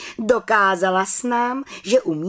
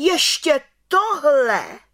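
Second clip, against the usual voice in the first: sudden, high, exclaiming cry; 7 semitones higher than usual. The head witch reacts to aunt Bimbula's accusation, crying out. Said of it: "Vykřikla vrchní čarodějnice".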